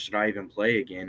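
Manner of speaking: normal talking voice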